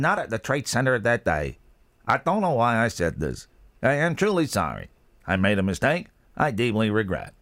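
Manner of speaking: synthesized, machine-like computer text-to-speech voice. Quoting someone's statement in a Stephen Hawking voice. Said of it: "That's the American Stephen Hawking".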